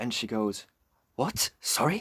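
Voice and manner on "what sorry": mock aggressive, high-pitched, snapping delivery. Retelling a woman's reply to a question about the last train: imitating an aggressive snap. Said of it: "so aggressive".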